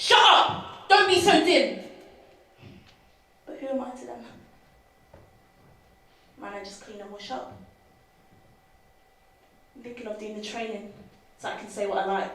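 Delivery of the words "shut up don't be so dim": high-pitched, very loud angry shout. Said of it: "I wanna grab him and shout".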